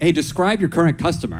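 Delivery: ordinary talk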